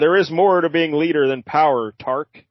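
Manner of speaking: usual speaking voice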